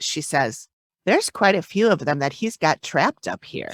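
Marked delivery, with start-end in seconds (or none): none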